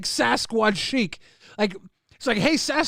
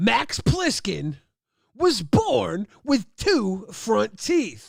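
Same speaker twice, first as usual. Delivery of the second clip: slow, dramatic movie-trailer announcer voice. Making up a fake movie trailer: dramatic movie-trailer announcer voice. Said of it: "it's got that one guy's voice where he's like".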